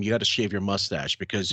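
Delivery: ordinary delivery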